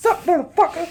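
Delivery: very high, loud, shrill put-on cat voice. Imagining the cat as a show host: Samuel L. Jackson voice. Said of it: "That or Samuel L. Jackson".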